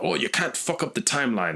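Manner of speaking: high-pitched, bad, laid-on British accent. Quoting a character who complained every episode, bad British Rip Hunter impression. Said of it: "That was my pirate voice, but uh, it's bad British".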